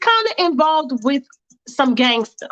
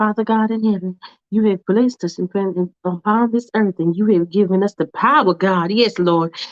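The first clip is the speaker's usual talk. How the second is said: low, devout, churchy praying-mother cadence; 6 semitones lower than usual. Acting out a mom in the middle of praying: acting out a mom praying. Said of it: "Faith is in the middle of praying".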